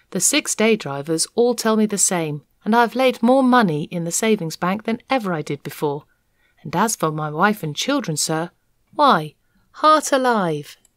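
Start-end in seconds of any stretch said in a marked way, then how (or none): none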